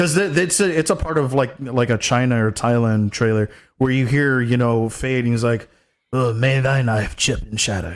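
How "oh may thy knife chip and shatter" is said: hard rasped-up, raspy voice. Retelling a trailer line where the actor rasps up his voice, raspy Stellan Skarsgård voice. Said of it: "trying to rasp up his voice".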